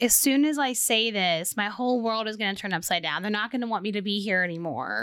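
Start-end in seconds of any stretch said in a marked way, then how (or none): none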